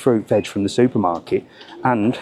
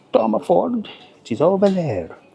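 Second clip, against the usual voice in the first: put-on, pitched-up French accent on English words; 9 semitones higher than usual. Retelling a man's answer when asked if he sells Tom Ford, in a French accent. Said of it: "I actually love the French accent when they speak English".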